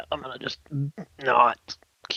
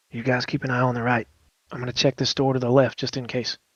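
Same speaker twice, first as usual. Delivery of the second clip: whispered in a put-on character voice. Playing a character sneaking with others on recon, whispering in character. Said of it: "I'll whisper to him".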